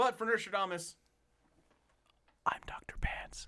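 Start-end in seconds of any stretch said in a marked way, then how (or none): 2.5-3.5 slow, hushed whisper. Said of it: "Why are you whispering?".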